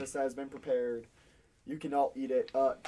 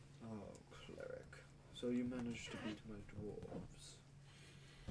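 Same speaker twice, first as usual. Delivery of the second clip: slow, barely there, unsettling whispered voice; 5 semitones lower, 21 dB quieter than usual. Voicing what speaks out of Ash's mouth to the cleric: Wendell's voice through Ash. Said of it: "This is the voice you hear coming out of Ash's mouth".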